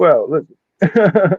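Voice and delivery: put-on Southern drawl. Imitating a fighter from a video they watched: Bryce Mitchell impression. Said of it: "It's definitely Southern".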